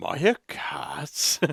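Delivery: slow, whispered cat voice. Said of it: "Markiplier cat voice".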